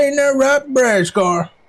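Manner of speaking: exaggerated Texas drawl. Teasingly addressing a friend, asking him to confirm something about how he talks when he is away. Texan accent. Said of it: "just kind of whisper over".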